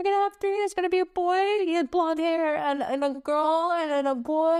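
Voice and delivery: acted weeping, overcome with emotion, tearful crying. Recounting what they saw, the speaker acts out Ben's apology: imitating Ben crying. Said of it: "Ben's like so emotional and he can't stop crying".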